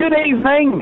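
high-pitched shout, called out across a distance. Greeting the hosts on a phone line: shouting a greeting. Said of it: "I don't know why we're shouting".

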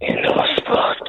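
breathy, whispered, seductive sex voice. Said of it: "you said that in a sex voice".

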